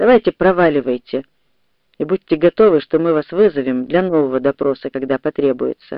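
ordinary delivery, nothing marked

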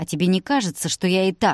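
ordinary delivery

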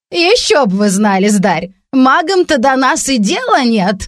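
scoffing snort. Answering the gentleman with a snort. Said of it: "фыркнула Краснолиха".

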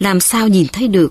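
ordinary delivery

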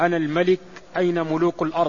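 normal talking voice

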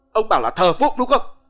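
high, loud, bellowing roar. After slapping Mr. Đường down onto the bed, the man roars at him. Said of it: "rồi gầm lên".

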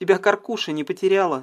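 ordinary delivery

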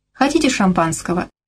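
usual speaking voice

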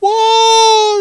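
very loud, very high, shrill, drawn-out in-your-face shout. Retelling a game scene where Michael yells in their face: imitating Michael yelling. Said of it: "Michael's in your face".

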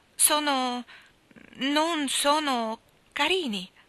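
hesitant, unwilling, reluctant, very slow and high. Reading a story, a girl answers a woman's questions about her dresses, reluctant. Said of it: "spiegò Anna riluttante".

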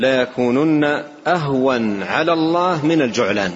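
ordinary talk, nothing marked

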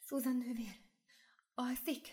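hushed, soft, high, quavering, trembling voice. A night visitor enters the narrator's cell and speaks to Sister Susan: quiet, trembling voice. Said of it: "Halk és remegő hangon meg is szólalt".

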